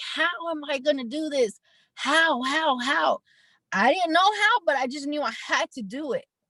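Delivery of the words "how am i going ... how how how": slow, crying, tearful begging voice. Retelling calling friends about taking in a niece, imitating own crying. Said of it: "just crying, crying, crying".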